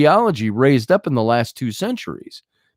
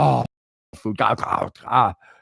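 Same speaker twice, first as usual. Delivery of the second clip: slow, creaky, excited cat voice full of delight; 3 semitones lower, 3 dB quieter than usual. Acting out the cat as it is given food: voicing an excited cat. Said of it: "and he's like".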